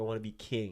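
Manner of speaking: ordinary delivery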